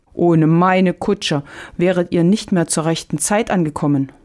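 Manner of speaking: ordinary delivery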